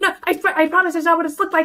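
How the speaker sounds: shrill, very high-pitched yelling. Voicing a character heard through the door, pleading her innocence: yelling. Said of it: "you hear her yelling".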